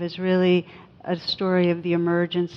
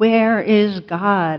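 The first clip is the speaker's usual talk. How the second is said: stern, pressing, raised voice; 2 semitones higher, 6 dB louder than usual. Retelling a pastor questioning a frozen boy: pastor's raised voice. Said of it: "raises his voice and shakes his finger".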